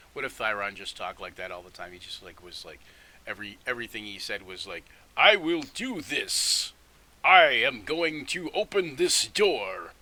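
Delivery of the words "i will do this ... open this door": booming, very slow, big cartoon-hero voice. Proposing how the character Thyron could always talk: The Tick cartoon superhero voice. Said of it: "like cartoon superhero voice".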